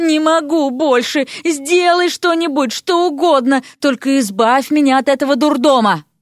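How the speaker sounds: groaning. Narrator reads Vasya's outburst at Zelenushka's chatter, moaning. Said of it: "простонала Вася".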